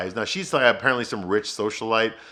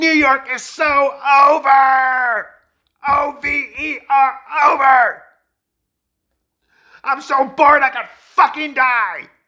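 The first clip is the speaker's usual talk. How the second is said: put-on screaming, higher and louder; 9 dB louder than usual. Retelling a drunk partygoer's rant at the window: imitating her screaming at everyone. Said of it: "she starts screaming at everybody at the party".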